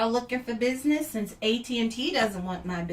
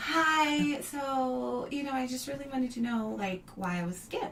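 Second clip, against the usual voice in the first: put-on, higher-pitched young woman voice; 2 semitones higher, 5 dB quieter than usual.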